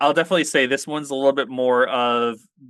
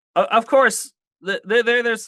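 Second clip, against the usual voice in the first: stammering, stumbling over words, much higher; 9 semitones higher than usual. Nervous about naming a book to the others and the audience, stammering. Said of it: "I'm stammering".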